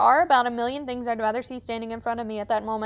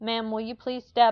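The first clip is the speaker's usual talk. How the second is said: mock-scared, timid, meek frightened voice. Recalling speaking to an unsettling woman, acting out a scared, timid plea. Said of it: "I spoke in a voice of the biggest scared pussy".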